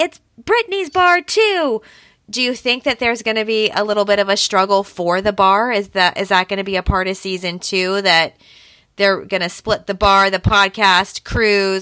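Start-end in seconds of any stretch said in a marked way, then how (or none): 0.0-1.8 high, drawn-out, stretched-out mock shouted outburst. Discussing Jax and Brittany's bar, the speaker imitates Nia yelling. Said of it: "Nia even yells".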